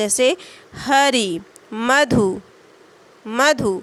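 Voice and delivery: हरि and मधु slow, first syllable stressed. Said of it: "थोड़ा बल देना पड़ता है".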